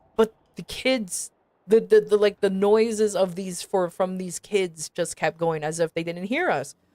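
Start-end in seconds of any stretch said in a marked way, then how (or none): none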